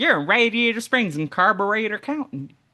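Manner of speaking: high cartoon truck voice. Recounting a movie, the speaker acts out a line: Mater voice. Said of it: "I'm doing my Mater voice".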